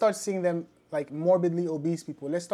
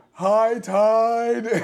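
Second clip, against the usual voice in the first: high, dopey bellow with "tide" drawn out; 5 semitones higher, 9 dB louder than usual. Voicing a high-tech device that makes sound, in a Patrick from SpongeBob voice. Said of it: "Why does your fat person voice sound like Patrick from SpongeBob?".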